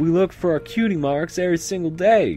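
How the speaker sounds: very high, loud, squeaky voice. Reading a story aloud, the narrator voices a filly with a horrible Apple Bloom voice. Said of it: "I have to do my horrible Apple Bloom voice".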